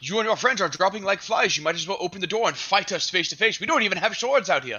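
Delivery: shouting, calling out loudly. A player's character calls to the enemies behind the door, shouting through a door. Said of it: "wanted to shout through the door".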